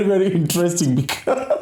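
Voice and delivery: laughing and giggling through the words. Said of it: "I'm sorry for laughing so much".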